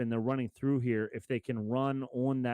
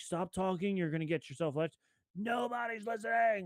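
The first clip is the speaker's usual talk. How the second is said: mock, urgent, pitched-up shout; 7 semitones higher, 5 dB quieter than usual. Retelling a TV scene where a character shouts: imitating someone shouting. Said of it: "and he shouts it".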